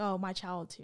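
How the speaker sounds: ordinary talk, nothing marked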